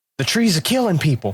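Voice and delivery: put-on thick Boston accent. Quoting a movie line, imitating Mark Wahlberg's heavy Boston accent. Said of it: "his Boston accent came out so heavy".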